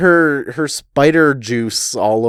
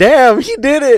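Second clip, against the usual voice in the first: high, loud exclamation of stunned amazement. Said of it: "They're like".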